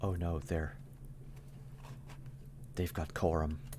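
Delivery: soft, hushed, worried whisper. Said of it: "you can hear [name] whisper".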